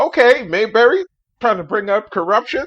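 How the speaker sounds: high-pitched, loud, incredulous tone. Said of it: "I was like".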